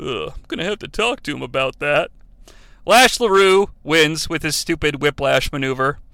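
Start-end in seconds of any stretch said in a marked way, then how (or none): 0.0-2.1 put-on ashamed mutter under the breath, quieter. Retelling a commentator's ashamed reply, imitating Kevin Nash muttering under his breath. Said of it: "under his breath, it's somewhat ashamed, Big Sexy replies".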